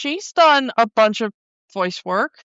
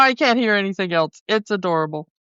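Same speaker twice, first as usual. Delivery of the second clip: normal talking voice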